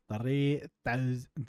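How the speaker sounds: clumsy, soft, put-on cartoon narrator voice. Waiting for gas to grow in a game, trying the SpongeBob narrator voice. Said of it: "I was trying to do the SpongeBob narrator voice".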